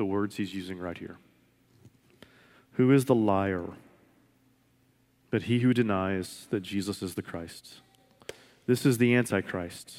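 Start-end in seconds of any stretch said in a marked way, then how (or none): 2.7-7.7 slow, unhurried reading. Speaker rereading a scripture passage aloud to listeners, reading slowly. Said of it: "I'm going to read it slow".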